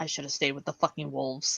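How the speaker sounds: close, hushed whisper right at the ear. Voicing a character who gets up close to Marcus: whispering. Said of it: "she gets up close to Marcus and whispers".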